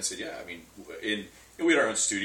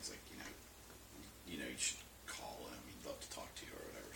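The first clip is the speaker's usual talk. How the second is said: very quiet, fast, near-whispered mumbling; 7 semitones lower, 18 dB quieter than usual. Recounting what a collaborator suggested while talking with a host, mumbling. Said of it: "I'm like mumbling".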